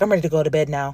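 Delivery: mock-blank, flat tone with zero emotion. Retelling what a woman told her, imitating a flat, emotionless tone. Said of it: "she said it with such a blank face".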